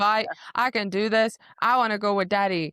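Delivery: acted-out tantrum. Recapping a story, voicing a character who wants to go along, acting out a tantrum. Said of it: "having a tantrum".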